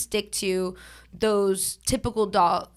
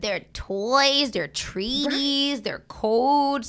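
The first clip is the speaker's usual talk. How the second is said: high-pitched, drawn-out voice for talking to animals; 5 semitones higher than usual. Listing the costs of owning a dog, slipping into a dog voice. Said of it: "that's my dog voice".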